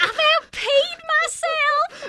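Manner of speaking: put-on high-pitched southern accent, small child voice. Retelling a funny line from playing a little kid on a show: southern little-kid accent. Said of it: "we had a southern accent".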